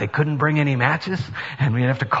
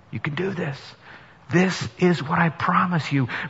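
quiet whisper; 2 semitones higher, 4 dB quieter than usual. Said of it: "he whispers in his ear".

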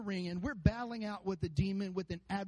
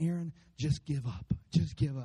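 put-on taunting whisper, lower pitch; 6 semitones lower, 5 dB louder than usual. Preaching to a church, voicing what he whispers in their ear, imitating a taunting whisper. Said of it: "And he's whispering".

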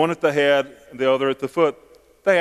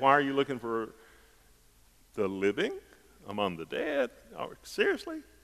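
very soft, quiet, swooping, mildly mocking sarcasm; 11 dB quieter than usual. Voicing the angel's question as he would have said it: a little sarcastic. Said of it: "I would have had a little sarcasm in my voice".

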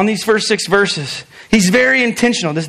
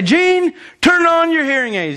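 put-on old woman voice, high screaming call; 8 semitones higher than usual. Retelling how grandma called from the kitchen to grandpa, imitating grandma screaming. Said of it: "My grandma would start screaming".

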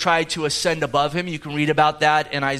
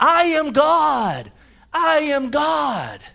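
mock top-of-lungs wail, very high, very slow; 11 semitones higher than usual. Retelling a movie clip of her running down the beach: imitating Shirley MacLaine screaming. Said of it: "she's screaming on the top of her lungs".

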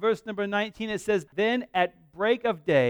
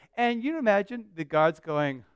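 ordinary talk

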